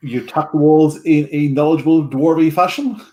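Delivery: ordinary talk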